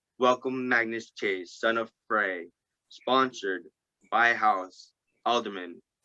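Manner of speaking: ordinary delivery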